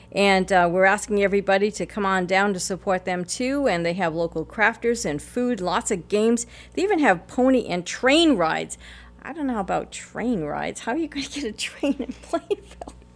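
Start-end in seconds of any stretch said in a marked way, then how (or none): 9.2-12.9 soft, swooping, sarcastic jab. Telling listeners about a local event's train rides, being sarcastic. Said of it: "I'm being sarcastic".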